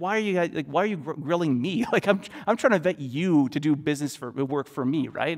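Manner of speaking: indignant, affronted outburst, tripping and stumbling over words. Retelling being questioned for two hours by six people, imitating own indignant outburst. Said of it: "I was, like, so indignant".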